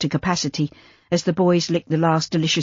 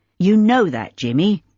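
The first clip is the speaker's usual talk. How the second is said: severe, stern, rebuking tone; 2 semitones higher, 4 dB louder than usual. Reading a novel aloud, a character scolding a boy: severe tone. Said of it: "Lawrence said severely".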